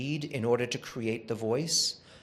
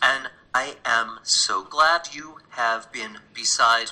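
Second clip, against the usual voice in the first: broken-up, halting, slow, choppy synthesized cloned voice; 6 dB louder than usual. A speaker plays a message in a voice that sounds like them, choppy voice. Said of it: "but it's choppy".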